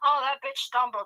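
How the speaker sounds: ordinary delivery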